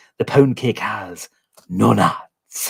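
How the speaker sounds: over-the-top, comic, cartoony Scottish accent. Retelling a comedy sketch, quoting a Scottish hotelier: cartoony Scottish accent. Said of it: "his cartoony accent".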